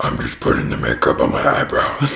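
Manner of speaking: very deep, rough, very low, creaky narrator voice. Practicing voices for narrating a partner's makeup: imitating partner doing makeup. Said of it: "practice my voices for whenever we do that video of me narrating your makeup thing".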